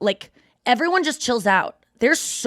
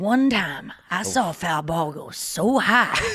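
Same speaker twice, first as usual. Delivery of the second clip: tall-tale storyteller voice, much lower; 2 semitones lower than usual. Repeating the other speaker's foul-ball line as a movie opening: Big Fish tall-tale opening. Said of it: "Sounds like the beginning of, like, the movie Big Fish".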